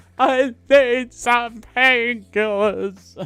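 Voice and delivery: mock very loud, high, drawn-out pained wailing. Retelling a woman in the next bed at triage, imitating her wailing in pain. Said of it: "And she's like wailing nonstop".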